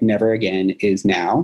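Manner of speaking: plain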